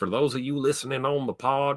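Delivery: fake backwoods country accent. Repeating the sign-off line when asked: put-on hick accent. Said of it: "That sounded pretty hickish".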